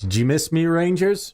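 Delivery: loud, high-pitched calling out. Voicing Merrick taunting the Rangers: Merrick's voice. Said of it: "you're gonna hear in Merrick's voice".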